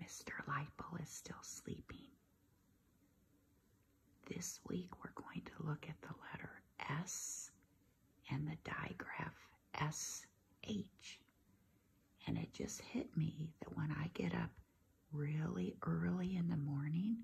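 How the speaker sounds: speaking in a hushed whisper. Host opening the episode while someone is still sleeping, whispering. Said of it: "but I have to whisper".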